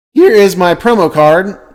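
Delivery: voice breaking, cracking mid-phrase, drawn out. Presenting a promo card while going through the deck: voice cracking. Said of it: "as my voice cracks".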